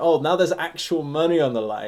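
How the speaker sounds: plain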